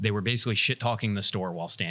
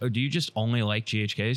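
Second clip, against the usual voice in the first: plain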